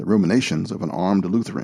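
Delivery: ordinary delivery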